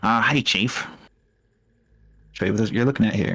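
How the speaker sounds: nasal talking-skull voice. Narrator voicing a skull that greets you as you wake, nasal voice. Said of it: "greets you with a nasal voice".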